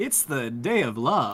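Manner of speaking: spoken in an anime-style cadence. Reading a message aloud like a TikToker, in a Char Aznable cadence. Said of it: "I have to read it in that like cadence".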